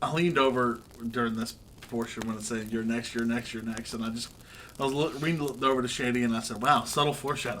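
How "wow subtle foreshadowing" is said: put-on exaggerated sarcasm. Recalling leaning over to a companion during a scene, retelling exaggerated sarcasm. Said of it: "just as sarcastically as possible".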